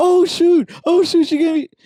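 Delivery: very high excited outburst. Retelling own reaction to being name-dropped: imitating own excited reaction. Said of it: "I got so freaking excited".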